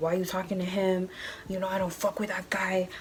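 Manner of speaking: acted angry swearing. Retelling how a little guy started cussing at someone, mock-angry cussing. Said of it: "starts cussing at Hernandez like".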